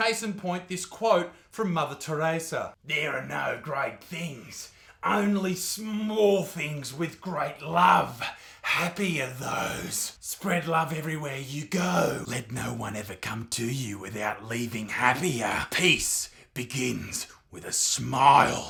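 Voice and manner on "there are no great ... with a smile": low, sinister, unsettling, creepy voice. Asked to do their voice, the speaker reads out a quote; creepy voice. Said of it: "it will always sound creepy if you say it in that voice".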